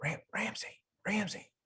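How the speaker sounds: very high, hushed, sneaking whisper. Sneaking over to a sleeping companion at camp: hushed whisper. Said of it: "And in very hushed tones".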